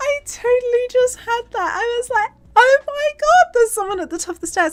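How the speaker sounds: very high, loud, startled, frightened yelp. Recounting spotting a figure behind them on a video feed: retelling own super high pitch. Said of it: "I've gone super high pitched".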